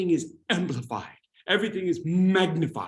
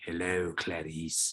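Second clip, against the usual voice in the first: low, sinister, creepy half-whisper; 13 semitones lower, 9 dB quieter than usual. Explaining soft speaking up close, the speaker shows what not to do: a creepy half-whisper. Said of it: "Not a creepy whispering like".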